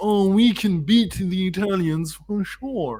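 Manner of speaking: high, slow, cocky bragging tone. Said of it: "your media was a bit too cocky".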